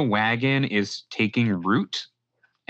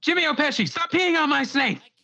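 loud shout, very high-pitched and shrill. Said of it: "yells out".

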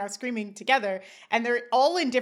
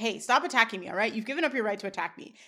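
ordinary delivery

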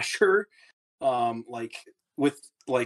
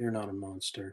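muttered, much quieter and lower; 5 semitones lower, 11 dB quieter than usual. In a tabletop roleplay, a player voices his character's reply, said under his breath. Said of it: "Says under his breath".

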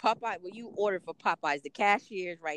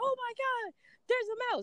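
mild mock scream, squealed very high.

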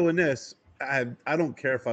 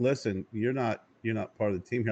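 plain

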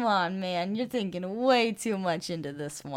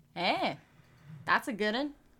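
insincere, sarcastic, unimpressed praising tone; 2 semitones higher, 3 dB quieter than usual. Responding to a fact about Pokemon biology: sarcastic. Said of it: "that was very sarcastic".

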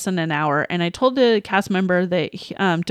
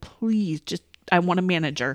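mock pleading, acted begging tone; 4 dB quieter than usual. Recounting an exchange with a woman who refused him: retelling begging. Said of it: "I begged to speak to a manager".

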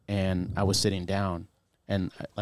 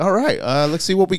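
put-on cheery voice, higher and louder; 10 semitones higher, 9 dB louder than usual. Retelling a paramedic coming to check the wound: imitating a cheery paramedic. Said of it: "he was very cheery".

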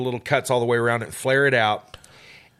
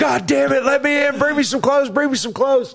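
acted-out scream, much higher pitch; 14 semitones higher, 5 dB louder than usual. Retelling lying flat in a truck bed, calling to people to let them in, retelling a scream. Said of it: "I'm screaming".

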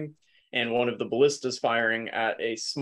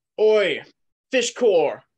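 high, booming, bellowed call; 8 semitones higher, 6 dB louder than usual. A ship's captain calls to his crew from the top deck, bellowing. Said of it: "you'll hear him bellow from the top deck".

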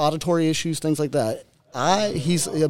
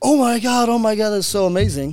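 put-on excited child voice, much higher and louder; 6 semitones higher, 4 dB louder than usual. A dad retells his son's reaction to a new dirt bike, imitating an excited kid. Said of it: "This kid jumps up and down like".

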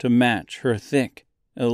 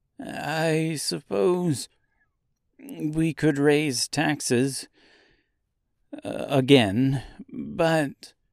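very slow, trembling, quivering voice with very drawn-out words; 3 semitones higher than usual. Reading a novel aloud, voicing the financier replying to her in a quivering voice. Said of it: "the financier said in a quivering voice".

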